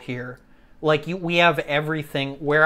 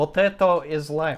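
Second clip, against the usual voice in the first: mock Polish accent, much slower. Replying to a viewer from Poland, doing a Polish accent impression. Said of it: "replying with my best Polish impression".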